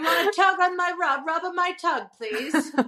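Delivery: put-on British accent, played up. Trading accents with the other speaker, showing off a british accent. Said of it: "British accent".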